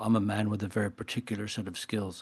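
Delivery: desperate action-movie hero voice. Quoting a line from the movie Taken: Liam Neeson voice. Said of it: "in Liam Neeson's voice".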